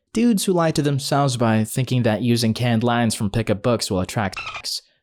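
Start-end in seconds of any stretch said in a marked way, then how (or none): none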